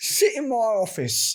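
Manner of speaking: bad Cockney accent, spoken very slowly. In a joking bit about a classic detective hat, doing a bad Cockney Sherlock Holmes. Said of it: "with a really bad Cockney accent".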